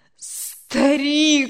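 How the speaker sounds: pleading. Crying out to the old man, who urges him to accept God, pleading. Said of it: "взмолился Анатолий".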